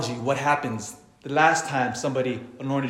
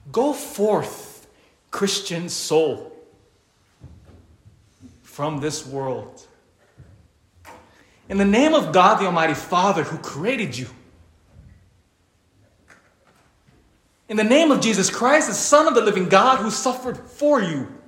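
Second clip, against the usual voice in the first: mock elevated praying voice, raised and pitched up; 5 semitones higher than usual. Standing over a woman amid her weeping children, re-enacting his prayer: retelling a raised-voice prayer. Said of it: "my voice kind of elevates".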